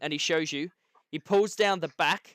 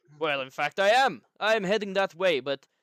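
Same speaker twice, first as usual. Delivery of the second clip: put-on fantasy dwarf voice with dwarf accent; 3 semitones higher than usual. Narrator voicing a character who replies to you: dwarf accent. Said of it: "He replies to you in dwarf".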